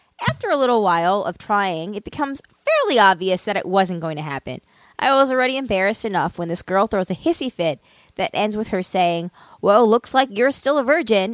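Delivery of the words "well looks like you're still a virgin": put-on catty, spiteful, bitchy, snide tone. Retelling what a girl said while throwing a hissy fit, in a mock bitchy tone. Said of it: "in the bitchiest tone".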